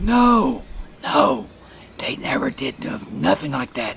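high whisper, then fully unvoiced.

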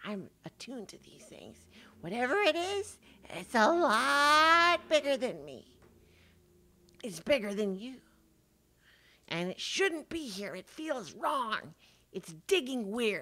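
harsh whisper. Voicing a creature in the ground warning a player: harsh whisper. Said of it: "your keen ears allow you to make out the harsh whispers".

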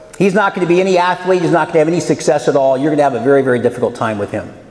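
usual speaking voice

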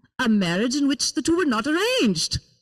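put-on Indian-accented voice. Reading aloud a mother's answer about arranged marriage: parent's Indian accent. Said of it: "speaking in the accents of my parents".

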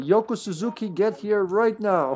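slow, parental calling voice. Joking about a name, calling out like a parent: mock parent calling a child. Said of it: "it sounds like a parent calling a child".

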